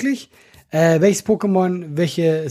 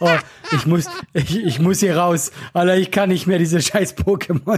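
ordinary delivery

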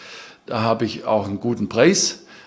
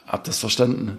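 usual speaking voice

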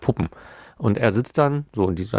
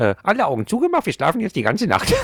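silly, very high, swooping sing-song cartoon voice; 10 semitones higher than usual. Recalling what the little characters always say at bedtime, funny character voice. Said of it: "hier diese lustige Stimme nachzumachen".

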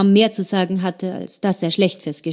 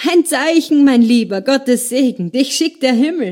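put-on loud, high, slurred drunken voice; 5 semitones higher, 5 dB louder than usual. A man who has drunk heavily calls out joyfully over Dante, loud drunken slurring. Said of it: "Dann lallte er laut".

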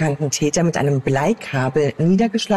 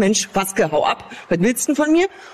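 acted-out yell in Berlin dialect; 4 semitones higher than usual. Retelling a woman's report of a silent man with a flashlight: retold shout in Berlin dialect. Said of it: "auf Berlinerisch".

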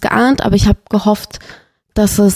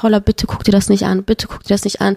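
plain

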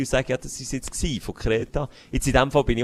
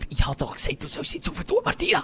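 put-on hushed, quiet, spiteful, venomous scolding tone; 12 semitones higher, 3 dB quieter than usual. Imitating someone scolding Martina without shouting, put-on hushed, venomous scolding. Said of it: "die nicht mehr schreit, aber so giftig in ihre Lautstärke ... in einem kässigen Ton".

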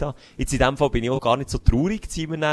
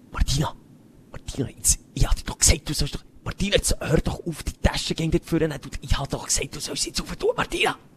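put-on venomous nagging older woman voice, higher, faster; 2 semitones higher than usual. Acting out an older-generation woman scolding martina, imitating a venomous nagging woman. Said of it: "Wie kann ich das jetzt nachmachen? ... so eine Lautstärke".

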